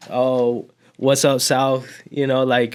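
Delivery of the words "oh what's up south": put-on casual, cool, relaxed manner. Retelling own reply on a surprise phone call: imitating playing it cool. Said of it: "obviously I had to play it cool".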